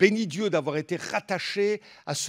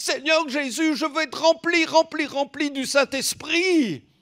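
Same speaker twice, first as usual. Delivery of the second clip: put-on teenage boy voice, small, almost childlike, higher; 9 semitones higher, 3 dB louder than usual. Retelling a teen's prayer at a youth camp, imitating David's small teen voice. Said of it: "je l'entends encore avec sa petite voix d'ado".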